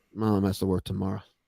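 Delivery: hushed voice. Talking on the show after a text says too loud: whispering. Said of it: "so I gotta whisper".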